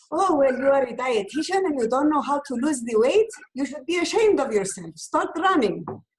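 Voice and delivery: Greek-accented speech.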